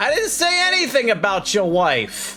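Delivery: yelling out. A character shouts after someone walking away from the cafeteria: shouting. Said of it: "And he shouts out".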